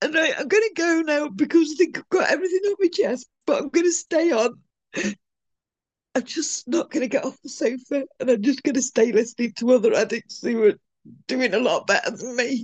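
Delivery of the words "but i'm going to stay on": tearful crying voice. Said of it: "I'm really sorry that I'm crying".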